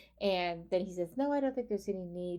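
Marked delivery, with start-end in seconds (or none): 1.2-2.4 very calm, even, cool robotic delivery. Speaker recounts a scene, speaking as Ash, in a calm robotic Ash voice. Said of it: "very calmly, in a very robotic voice".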